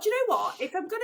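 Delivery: high, loud, indignant, outraged inner voice.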